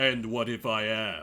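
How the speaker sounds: deep, low villain voice. A game master voicing a female villain questioned by the heroes, in Zora's deep villain voice. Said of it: "I already gave her the deep villain voice".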